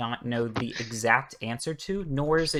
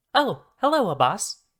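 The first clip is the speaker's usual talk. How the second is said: switched to a woman's voice; 7 semitones higher than usual. Narrating a game scene, voicing a body that sits up, woman's voice from a body. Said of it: "he does have a woman's voice coming out of his mouth".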